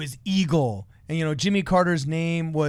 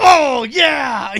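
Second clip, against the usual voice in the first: mock giddy, overjoyed, high and loud cry; 9 semitones higher, 10 dB louder than usual. Retelling how a candidate reacted to a low five on stage: imitating someone stoked out of his mind. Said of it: "he was so stoked out of his mind".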